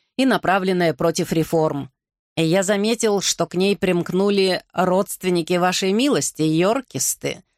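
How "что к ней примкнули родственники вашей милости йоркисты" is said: ordinary delivery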